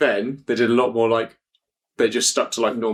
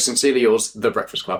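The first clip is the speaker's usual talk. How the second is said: plain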